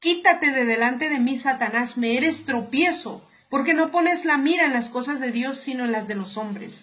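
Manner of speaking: normal talking voice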